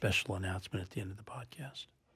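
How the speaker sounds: hushed, secretive, barely audible half-whisper. Podcast host talking to co-hosts and listeners, half-whispering. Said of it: "And I'm whispering about it".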